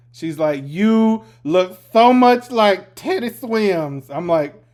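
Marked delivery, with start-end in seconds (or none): 0.6-4.1 put-on tipsy voice, slow, drawn-out, pitched-up fawning gush. Retelling what a drunk passenger said on a ride: imitating a drunk woman.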